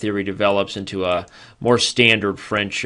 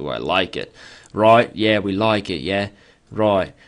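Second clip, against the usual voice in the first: put-on Cockney accent. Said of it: "I think it's a Cockney accent I'm working on".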